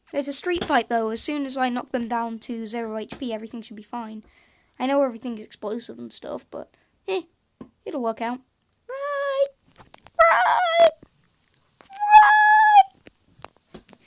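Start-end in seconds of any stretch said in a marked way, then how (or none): 8.8-13.8 squeaky, very high-pitched, loud shouts. Shouting during a game fight: high-pitched voice. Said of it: "I make my voice go so high-pitched".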